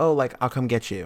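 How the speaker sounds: ordinary talk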